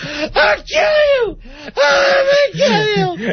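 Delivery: acted, shrill, very high crying scream, sobbing. Showing how he sounded, like you do at your big brother, imitating someone crying while yelling. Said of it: "that I'm crying when I'm yelling thing".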